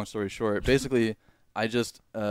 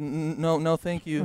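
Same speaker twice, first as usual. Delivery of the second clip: put-on scared voice, much higher; 6 semitones higher than usual. Retelling a childhood moment at McDonald's, imitating a scared reply. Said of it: "and I was like scared".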